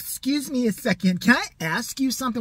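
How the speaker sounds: cocky, entitled, snotty delivery full of attitude. Retelling how a store worker came up to a friend: imitating a man with huge attitude. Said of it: "With the biggest attitude I've ever seen".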